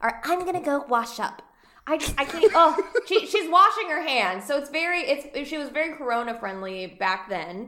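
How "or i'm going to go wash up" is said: put-on breathy, high-pitched voice. Retelling what a woman said to Seth, imitating a breathy, high voice. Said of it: "And high".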